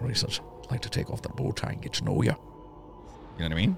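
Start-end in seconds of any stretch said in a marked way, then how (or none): 0.6-3.4 rough, creaky, charming voice. Giving an example of someone who sounds nice rather than aggressive, do a Sean Connery impression. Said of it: "Sean Connery".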